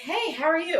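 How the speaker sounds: put-on sarcastic smart-ass tone. Retelling own words to a player's mother on the phone: imitating own smart-ass tone. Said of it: "I was being a little bit of a smart ass".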